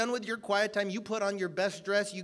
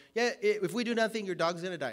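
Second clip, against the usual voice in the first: ordinary talk, nothing marked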